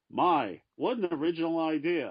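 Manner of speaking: snide, mocking slow drawl. Retelling a remark made on seeing a comic book: imitating Gene's sarcastic remark. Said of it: "he goes sarcastically".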